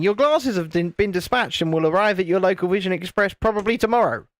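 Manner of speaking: ordinary delivery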